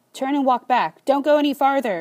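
loud, high-pitched yelling. A man stops two people heading toward the woods, yelling. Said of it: "he yells".

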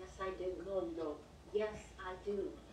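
put-on soft, quiet old woman voice.

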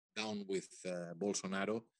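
ordinary talk

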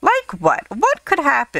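high, insistent, pressing tone. Clary presses Jocelyn on why she cannot stay behind, demanding. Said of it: "Clary demanded".

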